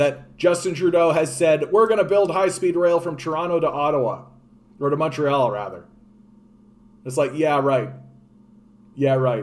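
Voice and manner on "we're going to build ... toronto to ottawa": ordinary talk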